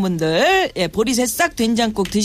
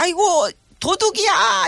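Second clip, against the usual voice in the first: put-on high-pitched old grandmother crying out; 8 semitones higher than usual. Imagining what a grandmother shouted: imitating grandmother crying thief. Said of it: "이렇게 하지 않으셨을까?".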